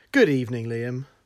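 overly proper, very formal put-on tone. Returning a hello at the start of a podcast: put-on very formal greeting. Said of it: "that was very formal".

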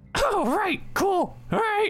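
very high, squeaky little imp voice. A game master voices an imp answering the players, in imp voice. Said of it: "The imp goes".

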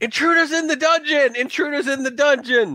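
high, alarmed yelling. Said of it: "and he yells".

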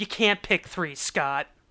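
loud, yelled voice. Retelling how a writer yelled back from the writers' room: imitating a writer yelling back. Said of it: "he just yelled back".

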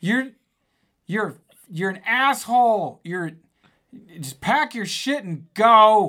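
slow, high-pitched loud yelling.

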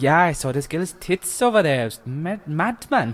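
bad put-on Welsh accent, high and slow. Recalling a video of Welsh kids, the speaker quotes them, bad Welsh accent. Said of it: "That was a dreadful Welsh".

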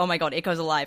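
plain

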